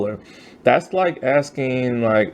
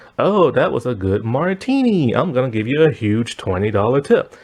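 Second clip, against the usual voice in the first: normal talking voice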